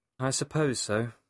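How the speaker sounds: lacking excitement, unenthusiastic. Asked whether their brother's engagement has a big party, answering unenthusiastic. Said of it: "You don't sound very excited about it".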